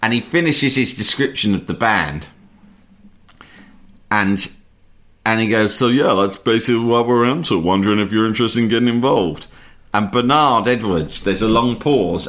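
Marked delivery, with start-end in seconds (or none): 5.8-9.5 put-on pretentious voice. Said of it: "a really funny voice of himself being really pretentious".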